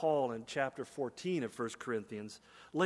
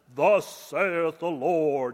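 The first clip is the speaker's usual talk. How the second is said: very loud, resonant, booming prophet voice; 10 dB louder than usual. Acting out an older man in an old movie speaking for God, deep Ten Commandments voice. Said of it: "with a deep and toned voice".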